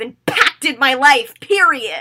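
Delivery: mock, very loud, swooping, drawn-out, play-angry tone. Recreating a scene where she playfully hits his chest: imitating a playful angry line. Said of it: "playfully and, like, angrily when she goes".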